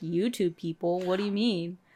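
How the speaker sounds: usual speaking voice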